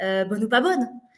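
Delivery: ordinary delivery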